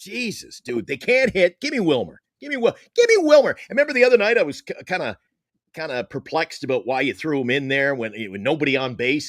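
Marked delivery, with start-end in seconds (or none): 0.0-3.6 mock yelling, higher. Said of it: "Every time I kept yelling".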